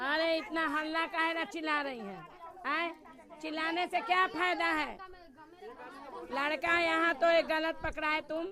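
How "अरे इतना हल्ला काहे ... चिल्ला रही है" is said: ordinary delivery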